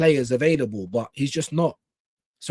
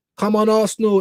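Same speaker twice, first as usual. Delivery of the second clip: fierce, aggressive tone, pitched much higher; 6 semitones higher, 6 dB louder than usual. Speaker cheering on Arsenal, in an aggressive voice. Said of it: "in an aggressive voice".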